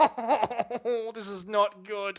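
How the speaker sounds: put-on panicked voice. Retelling own reaction while reviewing a race incident: retelling own panic. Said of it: "I'm, like, panicking".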